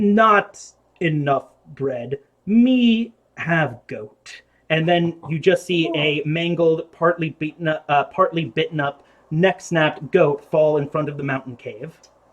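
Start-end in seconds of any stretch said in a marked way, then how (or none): 0.0-4.4 slow, lumbering giantess voice shouting out. Voicing a giant who shouts into the cave: giant yelling. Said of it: "she yells out".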